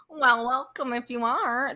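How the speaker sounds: exaggerated Midwestern accent, high and drawn-out. Repeating own past line from an old episode: exaggerated Midwest accent. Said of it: "That's the Midwest of me".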